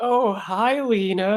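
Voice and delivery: slow, nervous character voice. Fang Jin notices Lena bursting out of the tea house and greets her; nervous greeting. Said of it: "he like nervously scratches behind his head".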